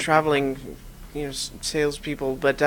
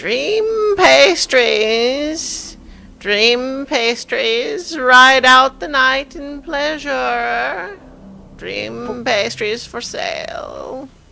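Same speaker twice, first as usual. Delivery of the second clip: put-on very high, raised, calling old woman's voice; 10 semitones higher, 7 dB louder than usual. A narrator voices an old woman heard from the street outside, old woman's voice. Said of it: "an old woman's voice saying".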